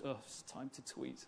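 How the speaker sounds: soft, slow, begrudging, drawn out. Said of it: "the sort of person who begrudgingly goes".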